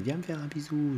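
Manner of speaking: very high, squeaky, creepy, disgusting little clown voice. Retelling what the clown said to her, in the clown's disgusting little voice. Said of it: "avec sa petite voix dégoûtante".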